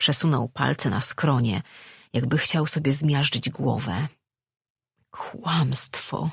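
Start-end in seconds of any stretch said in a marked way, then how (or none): 5.1-6.3 groaning, quieter. Lejard, whom Emerald is trying to calm, moaning. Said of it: "wyjęczał".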